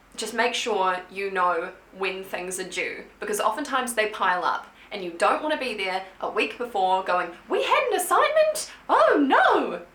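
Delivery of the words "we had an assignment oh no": very high, swooping, squeaky, drawn-out cartoon voice. Giving study advice, acting out a student who forgot a deadline, in Mickey Mouse voice. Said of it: "Mickey Mouse voice".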